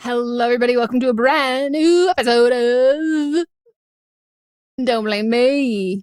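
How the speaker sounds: slow, showy put-on auctioneer announcing voice. Opening the episode, answering as an auctioneer: put-on auctioneer accent. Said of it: "What is this accent you're doing?".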